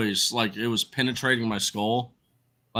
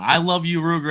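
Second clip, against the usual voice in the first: put-on, high-pitched, adoring yell; 6 semitones higher, 3 dB louder than usual. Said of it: "both sides yelling".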